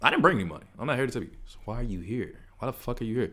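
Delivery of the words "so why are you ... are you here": sassy, confrontational delivery full of attitude. Telling a podcast story, the speaker quotes a woman who confronted her, mimicking sassiness. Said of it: "that was sassy as fuck".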